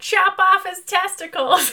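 mock, high, drawn-out shouted yell. Describing an imagined choir scene, acting out someone in the crowd yelling. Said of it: "And someone yells".

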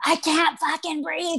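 put-on shrieking cry, very high-pitched and drawn out. Recalling an inmate yelling after being OC'd, retelling a scream. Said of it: "So she's screaming".

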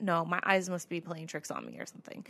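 ordinary talk

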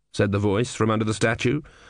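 ordinary delivery

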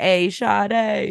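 mock high hooting street holler, "Sade" stretched out. Explaining how a name sounds, like someone hollering across the street. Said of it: "like somebody hooting and hollering to another person in the street".

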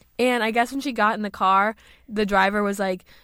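ordinary talk, nothing marked

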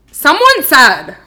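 full-on, very loud screaming outburst. Starting to read out what someone said, screaming. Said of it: "Why are you screaming?".

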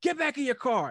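very high, shrill, loud yelled scream. Retelling a stop at the gate, speaker reenacts screaming at a man, retelling own scream. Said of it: "So I'm screaming at this dude".

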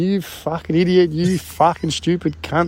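play-acted, abusive swearing rant. Retelling a friend swearing at him on the phone: imitating someone swearing at him. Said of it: "he's swearing at me on the phone".

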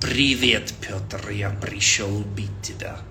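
very slow, movie-style fake Russian accent. Explaining how an accent is perceived, the speaker demonstrates a fake Hollywood Russian accent. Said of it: "think of Hollywood movies with that fake Russian accent".

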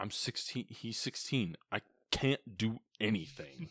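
ordinary talk

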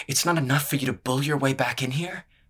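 trembling, shaking voice, half-shouted. A woman follows a man down the hall, confronting him, her voice shaking. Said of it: "Her voice shook".

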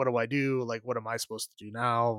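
acted crying, quiet. Speaker retells the aunt upset about the dog's death, imitating Aunt Beth crying. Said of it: "She's like crying".

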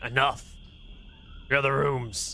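growled, gravelly orc voice. Narrating an overheard orc, in a growling orc voice. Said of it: "you can hear the growling of an orc saying".

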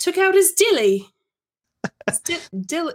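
put-on sudden British accent. Reading a racy passage aloud, slipping into a british accent. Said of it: "I don't know why I said that with a British accent".

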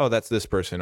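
ordinary talk

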